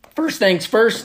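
voice breaking, cracking and jumping high. Podcast host opening a first live YouTube episode, voice cracking. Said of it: "my voice just cracked".

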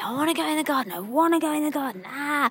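put-on high-pitched screaming child's voice. Retelling how Jasper screamed to go in the garden: imitating a screaming child. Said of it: "Jasper was just screaming at me".

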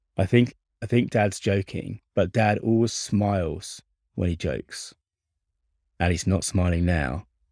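normal talking voice

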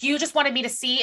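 put-on angry voice. Retelling a character's line to the person she is pissed at: imitating someone angry. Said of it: "and then she's pissed".

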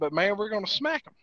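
normal talking voice

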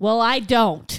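loud, belted out at full volume. Retelling a two-year-old's answer during a wedding ceremony, retelling a toddler's loud reply. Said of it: "in her volume 8 voice says".

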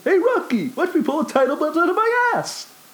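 very high, swooping cartoon moose voice. Describing a wrestling title belt change, picturing Bullwinkle talking, in a Bullwinkle voice. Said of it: "it's frightening that I did that damn voice".

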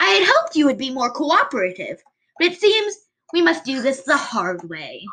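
high, squeaky put-on little voice. Role-playing a scene about having knives, in a high squeaky put-on voice. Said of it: "I love how you use a squeaky voice".

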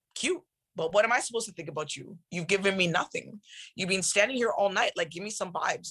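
ordinary talk

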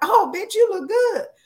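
very high-pitched, friendly voice. Explaining how tone changes a word's meaning, the speaker demonstrates a friendly tone. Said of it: "it's my tone of voice".

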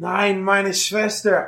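rasping shout, very high-pitched, raspy cry. Game master voicing a character crying out as enemies attack a player's character, raspy voice. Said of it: "in his raspy voice, crying out".

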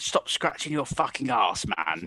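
bad, half-managed, unconvincing put-on East London accent. Pitching a swearing character with an unconvincing put-on East London accent. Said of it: "He's putting on, like, an East London accent".

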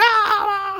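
high mock scream. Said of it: "they're, like, screaming".

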